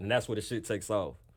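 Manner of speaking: ordinary delivery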